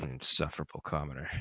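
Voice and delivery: quiet, mumbled aside under the breath. A character slams the door on a departing visitor, muttering under his breath. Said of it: "he mutters under his breath".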